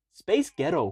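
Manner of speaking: put-on American accent. Trying a joke that only works in an american accent: american accent. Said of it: "that's 'cause I was doing American accent".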